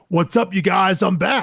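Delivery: put-on eighties Southern California surfer-dude voice. Showing how to read a returning character's word cloud, Southern California surfer dude voice. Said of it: "read it like you're a Toto the Rad Surfer dude from Southern California".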